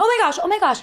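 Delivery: mock frantic, repeated outcry, very high-pitched. Retelling seeing a strange light on the ceiling: imitating freaking out. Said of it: "And I started freaking out".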